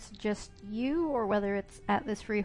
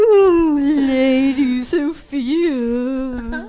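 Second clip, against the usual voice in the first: very loud, mocking, belted voice, name drawn out; 4 semitones higher, 14 dB louder than usual. Mocking the way Reggie greeted Sophia: mocking Reggie's put-on voice. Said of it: "that whole goddamn voice bullshit".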